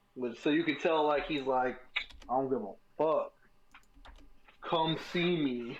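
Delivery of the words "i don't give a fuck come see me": put-on Jersey-style New York Italian accent. Imitating a skinny guy who talks like a jersey italian: put-on jersey new york italian accent. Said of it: "Jersey, New York Italian".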